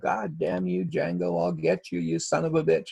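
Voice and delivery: high, mild mock scream.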